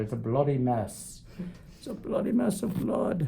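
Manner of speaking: put-on English accent, done for show. Repeating a phrase for English fans watching, in an English accent. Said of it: "I said that with an English accent".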